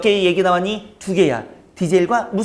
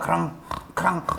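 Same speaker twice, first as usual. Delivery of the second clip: quieter, stuffed-nose, congested creature voice; 9 dB quieter than usual. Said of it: "콧구멍에 뭐 막혔나 봐".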